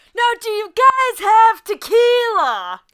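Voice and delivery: very high, very loud, shrill shouted yell. In a role-play, calling to figures about ten feet away holding cups, yelling. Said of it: "Why are you yelling?".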